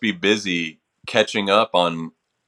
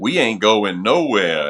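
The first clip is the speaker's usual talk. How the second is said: super sarcastic throwaway delivery, sing-song; 3 dB louder than usual. Retelling a remark made for a TV soundbite: retelling own sarcastic line. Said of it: "I was being super sarcastic".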